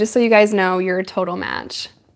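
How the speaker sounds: ordinary talk, nothing marked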